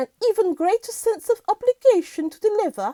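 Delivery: put-on British accent. Reading a news quote aloud: British accent like the Queen. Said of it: "when I'm trying to do this British accent".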